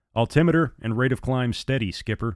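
ordinary delivery

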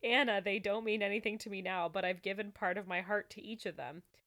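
ordinary delivery

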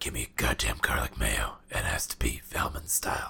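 fake disguise voice, hushed, breathy, near whisper. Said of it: "How does it change your voice like that?".

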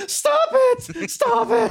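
screechy, very high, shrill, drawn-out yell. Retelling a clip where Gabe Sapolsky walks in on people fighting; screechy imitation. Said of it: "Screechy voice".

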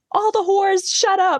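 mock piercing scream, very high and shrill. Act out a woman who chases the girls out after the door slams, imitating a woman screaming at others. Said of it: "is like screaming at them like".

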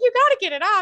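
play-acted, very high, loud, frantic, panicked, desperate tone. Retelling a waxing mishap, quoting herself to the woman waxing her: acting out her own panic. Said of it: "I'm like panicking".

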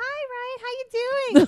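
very high, very loud, all-happy gushing voice. Retelling how an acquaintance greeted ryan: imitating someone being all happy. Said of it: "be all happy".

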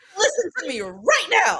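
put-on insistent yell. Retelling how Luna yells at Harry: imitating Luna yelling. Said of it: "Luna yells at Harry".

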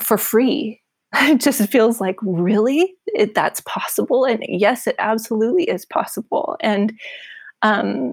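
choked-up, emotional voice catching. Speaker continuing a thought while moved, getting choked up. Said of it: "i'm getting all choked up".

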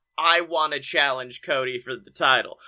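normal talking voice

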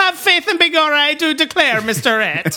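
put-on blended Scottish and Southern accent, high-pitched. Describing a loud, giggly housekeeper character, speaking as Liza in a Scottish-Southern accent. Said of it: "She's like a Scottish Southern Baptist".

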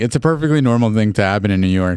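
ordinary talk

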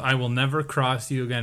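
plain

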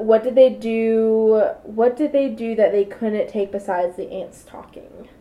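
ordinary talk

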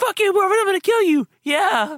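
very high-pitched voice that cracks. Doing an impersonation of Scott yelling: Scott voice crack impersonation. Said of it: "my Scott voice crack impersonation".

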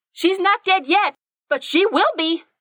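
very high-pitched, angry outburst. Narrator reading a woman's retort in a hostile exchange, her anger getting the best of her.

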